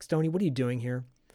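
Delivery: put-on angry voice. Retelling a scene where she walks in on Stoney: imitating someone angry. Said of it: "She's totally pissed".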